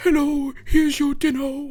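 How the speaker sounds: goofy, funny, high-pitched cartoonish voice. Retelling how the imagined dinner man talks, in his funny voice. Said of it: "the dinner man makes a fucking voice like".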